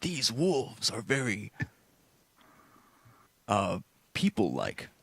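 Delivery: carrying stage whisper. Playing a character in a tabletop game, describing wolves, loud whisper. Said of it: "I'm trying to whisper".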